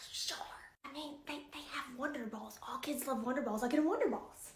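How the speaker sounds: secretive, hushed, very quiet whisper. Answering someone who wants a specific goodie-bag item, whispering. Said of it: "And why are you whispering?".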